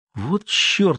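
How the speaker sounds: high, whispered under the breath. The narrator, having just seen a dead body, turns to a companion, whispering. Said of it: "прошептал я Олегу".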